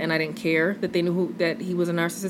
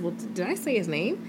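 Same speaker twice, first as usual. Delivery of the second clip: play-acted teasing, mischievous, quick, soft and playful; 5 dB quieter than usual. Retelling what a woman said about her last relationship, imitating her playful tone. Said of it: "she playfully says".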